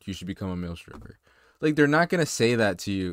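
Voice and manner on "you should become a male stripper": put-on whisper, quieter. Retelling what a girl said into your ear: imitating a whisper. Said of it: "she literally whispered in my ear".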